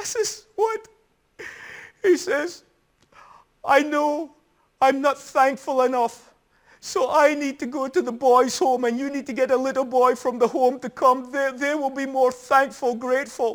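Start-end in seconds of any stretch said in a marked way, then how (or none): 3.6-13.5 acted-out sobbing, tearful child voice. Retelling a tearful boy packing to leave for the boys' home, imitating a boy crying. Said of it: "And he's crying and he says".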